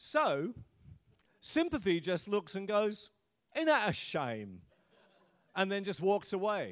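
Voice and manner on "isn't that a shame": broad Cockney accent, louder. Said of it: "I can slip into it anytime I want to".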